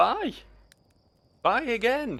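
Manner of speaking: squeaky, very high-pitched voice. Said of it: "say bye in a high-pitched voice".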